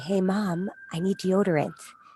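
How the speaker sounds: hushed whisper. A mother retells what her teenage son whispered to her, whispering. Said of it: "he whispered to me".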